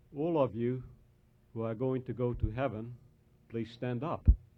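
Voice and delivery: soft, quiet, hushed, low-key voice. Telling a story about a preacher stopping mid-sermon, in a quiet voice. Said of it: "In a quiet voice".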